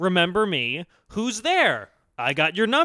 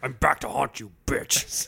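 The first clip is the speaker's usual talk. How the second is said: breathy, whispered horror-villain voice, taunting; 9 semitones lower, 5 dB quieter than usual. Acting out a phone-plan sketch line as Freddy Krueger: Freddy Krueger voice. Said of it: "It was Freddy Krueger".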